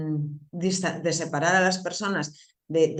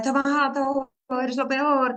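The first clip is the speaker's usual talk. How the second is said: high, stretched-out shout; 8 semitones higher than usual. Retelling a person's threats during a crisis: imitating someone shouting. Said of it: "Y la persona gritándome".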